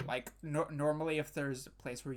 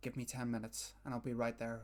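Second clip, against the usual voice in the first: rushed, hushed half-whisper, barely audible; 3 semitones lower, 6 dB quieter than usual. Narrating a game, a half-whispering voice suddenly comes through to the players: half-whispering voice. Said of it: "suddenly a whispering voice comes through".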